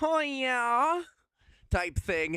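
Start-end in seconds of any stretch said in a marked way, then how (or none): 0.0-1.0 playful, high mock voice with yeah stretched out. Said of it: "'cause I can do the".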